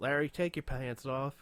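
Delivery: put-on Southern accent. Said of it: "when did she get the Southern accent".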